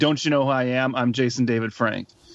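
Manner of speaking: plain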